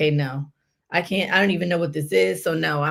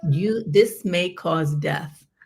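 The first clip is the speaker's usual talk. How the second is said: usual speaking voice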